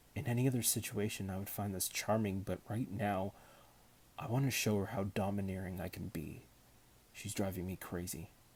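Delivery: plain reading voice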